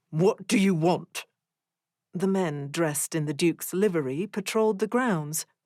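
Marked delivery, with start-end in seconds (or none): 0.1-1.2 haughty, deep, commanding snarl. Orion looks over his shoulder at the men with the lantern, deep commanding snarl. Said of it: "Voice deep and commanding, he snarled".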